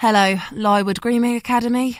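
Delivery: rough, slightly bored, flat gruff voice. Answering Saskia's call to a grooming academy: gruff, slightly bored voice. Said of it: "A gruff, slightly bored voice answers".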